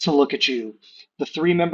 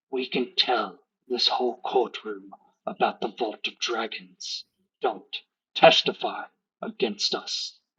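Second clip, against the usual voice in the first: quiet, menacing whisper; 4 semitones lower, 4 dB quieter than usual. Voicing a chained prisoner warning someone passing by: whispering threat. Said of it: "and she whispers".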